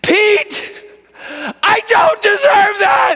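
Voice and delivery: very high, very loud, anguished agonized bellow. Recounting what a man cried out to him, retelling an agonized bellow. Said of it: "in just this beautiful agony, he bellowed".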